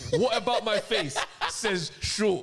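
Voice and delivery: slow, laughing disbelief. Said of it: "I don't get it".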